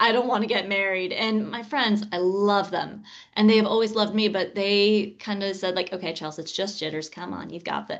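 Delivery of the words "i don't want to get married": tearful, sobbing, crying through every word. The night before her wedding, friends drag her through Walmart; retelling her own sobbing. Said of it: "I'm sitting there sobbing, saying".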